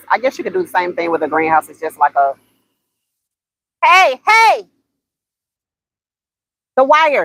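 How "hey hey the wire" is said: high, drawn-out yell. Speaker trying to get his attention after he grabbed a wire, yelling. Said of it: "I'm sorry for yelling in y'all's ear".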